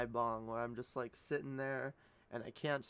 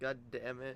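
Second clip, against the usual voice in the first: plain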